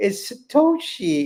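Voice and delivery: put-on very high, tiny toddler voice. Retelling a child pointing at a picture book, imitating a little baby's voice. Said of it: "in the little baby's voice".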